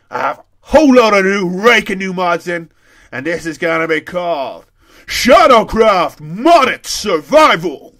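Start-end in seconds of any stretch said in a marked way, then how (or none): 3.1-7.7 booming big-voice announcer voice, louder. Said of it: "To being the big voice guy".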